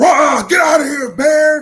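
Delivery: throaty, guttural shout, very loud and high-pitched. Demonstrating how men scare off a bear, with a guttural yell. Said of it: "produce a guttural sound".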